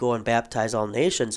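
normal talking voice

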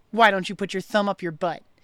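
ordinary delivery

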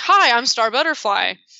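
ditzy, little cartoon-style voice. Describing a scene where one Star greets the other, in a ditzy Star Butterfly voice. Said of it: "ditzy little Star Butterfly voice".

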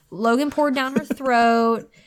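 ordinary delivery, nothing marked

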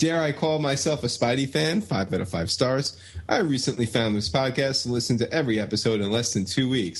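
ordinary delivery

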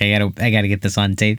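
ordinary delivery

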